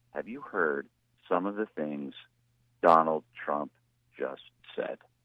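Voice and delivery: very low, grave, somber newsreader voice, halting, broken up. Retelling a woman's quick news segment: mock-somber news tone. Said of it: "with a real somber tone".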